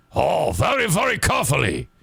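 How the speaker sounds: sing-song, put-on Japanese-accented English. Retelling how someone imitated the way Japanese guys talk, put-on Japanese accent.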